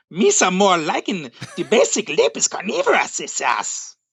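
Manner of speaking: high, swooping, sing-song character voice. Proposing a voice for reading a character's dialogue, the speaker does a Watto voice. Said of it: "That's my Watto".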